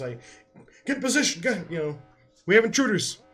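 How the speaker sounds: forceful barking voice. Playing a guard giving urgent commands to the others as intruders are detected, barking orders. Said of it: "he's like yelling at the guards".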